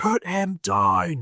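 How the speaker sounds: very high-pitched, shrill, acted-out screaming. Retelling how a lord pushed through the line and pointed at him: retelling a scream. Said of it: "and screams".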